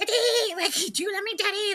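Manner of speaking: very high, cute little-princess pet voice. Teasing someone by following him around, doing Kitty's voice. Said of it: "I'll do Kitty's voice".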